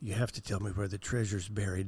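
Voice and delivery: hushed, soft acted stage half-whisper. Acting out a joke wished for when saying goodbye: acted half-whisper.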